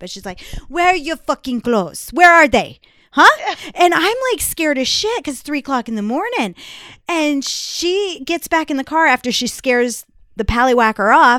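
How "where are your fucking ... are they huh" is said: imperfect put-on Russian accent, much louder. Retelling a russian woman confronting them at 3 in the morning, imperfect russian accent. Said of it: "She was Russian, so I can't do a very great impression of it".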